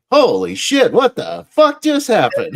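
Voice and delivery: very high, loud sports announcer cry. Retelling a movie scene where a game is blown: imitating the announcer. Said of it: "the announcer goes".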